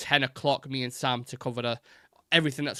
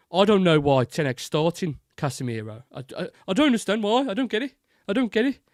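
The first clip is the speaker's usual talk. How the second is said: put-on weird Brummie accent, louder; 7 semitones higher, 6 dB louder than usual. Getting into Ogbonglehole mode, doing his weird Brummie accent. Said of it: "it's a Brummie accent".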